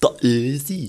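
very loud, booming stadium announcer voice. Speaker imitates the Hoffenheim stadium announcer, Hoffenheim stadium announcer impression. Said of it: "wie der Stadionsprecher von Hoffenheim sagen würde".

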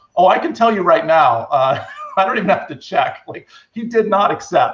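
put-on chuckling, laughing, amused delivery. Retelling their own reply about an engineer who never answered an offer, laughing. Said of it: "I remember laughing, going".

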